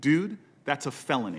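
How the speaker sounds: mock dry, deadpan, matter-of-fact delivery. Retelling the reply to a guy who stopped the speaker before going on stage, deadpan. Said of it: "I looked at him deadpan".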